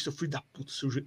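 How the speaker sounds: quiet, muttered under the breath. Retelling a fan cursing the referee at a match: imitating someone cursing quietly. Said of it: "falando baixinho".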